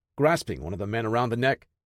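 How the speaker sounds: ordinary delivery, nothing marked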